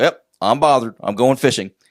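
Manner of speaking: fed-up, bothered cartoon character voice. Retelling a King of the Hill joke where the character gets mad: Hank Hill voice. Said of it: "episode of King of the Hill where Hank Hill gets mad".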